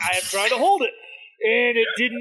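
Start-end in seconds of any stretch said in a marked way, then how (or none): none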